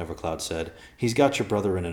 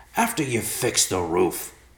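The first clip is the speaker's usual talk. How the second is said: outraged, indignant yell, swooping pitch; 3 semitones higher than usual. Narrator reads a voice answering Evercloud's request, yelling indignantly. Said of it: "the voice yelled indignantly".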